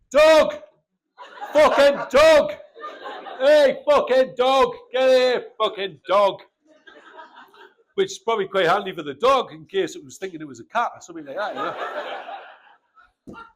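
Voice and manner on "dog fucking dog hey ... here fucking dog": put-on furious old man voice, loud, shrill angry yelling. Retelling how an angry old man calls his dog: imitating an angry old man shouting. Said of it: "he just shouts at it".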